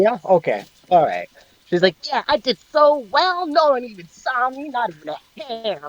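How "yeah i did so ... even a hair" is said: chirpy, high, excited little squirrel voice. Voicing a squirrel proud of sneaking unseen: excited squirrel character voice. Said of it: "little excited squirrel chirps".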